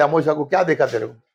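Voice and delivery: ordinary delivery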